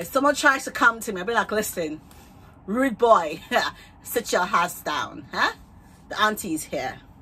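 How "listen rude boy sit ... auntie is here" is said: very bad, clumsy put-on Nigerian accent. Imagining telling off someone who approaches her, in a bad Nigerian accent. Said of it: "That was a very bad Nigerian accent".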